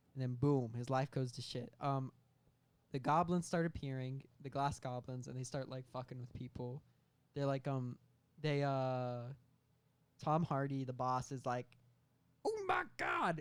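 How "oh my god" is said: very high, squeaky, bad New York accent. Describing a scene where Tom Hardy's boss character reacts, bad Tom Hardy New York accent. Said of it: "The bad New York accent".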